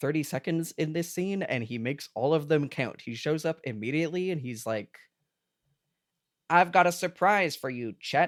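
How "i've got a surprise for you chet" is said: plain, high, loud announcing voice. Retelling a film scene with a David Lynch impression. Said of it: "bust out my David Lynch impression".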